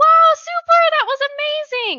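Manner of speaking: gushing, very high, very loud, effusive tone. Explaining how people praise dogs, showing the praise with pitch going up. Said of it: "immediately going up a".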